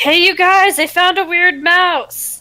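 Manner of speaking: deliberate, acted calling out, slow and drawn out. Playing a character who calls the group over: yelling in character. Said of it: "I'm gonna yell".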